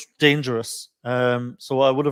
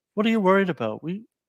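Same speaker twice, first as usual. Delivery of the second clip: calm, soothing, reassuring, unbothered tones, pitched slightly higher; 6 semitones higher than usual. Imitating Charlie staying calm in the last twenty minutes: soothing tones. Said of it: "those soothing tones he has".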